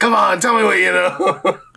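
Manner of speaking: high, rough, tough-cop voice. Playing a character pressing a prisoner: hard cop interrogation. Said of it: "hitting him like a hard cop".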